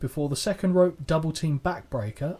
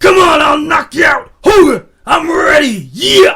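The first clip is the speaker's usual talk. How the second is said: very loud, very high, drawn-out bellowing yell; 13 semitones higher, 18 dB louder than usual. Retelling a wrestler's backstage outburst at a cameraman: Randy Savage shouting impression. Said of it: "I can't do Savage shouting".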